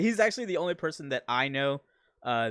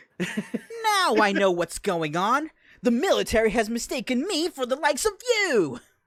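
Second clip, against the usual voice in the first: high, loud, belted, dramatic line reading; 9 semitones higher, 6 dB louder than usual. Trading quotes from Sonic Adventure 2: quoting Sonic Adventure 2 in character. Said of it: "I can quote, like, everything in Sonic Ad-, Adventure two".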